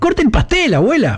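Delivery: high, sudden, eager and impetuous urging. A woman addresses the grandmother before the family, suddenly impetuous. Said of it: "de pronto se volvió impetuosa".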